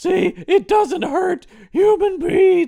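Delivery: squeaked out, high and loud. Retelling a scene where a character turns a gun on the boss, Squeaky Voice Teen impression. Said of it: "squeaky voice teen from The Simpsons".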